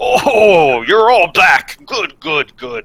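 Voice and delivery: very high, loud, talking while chewing. Voicing Uncle Barazon greeting the returning group from the kitchen, mouth full of food. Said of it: "he's got like a mouthful of food, and he says".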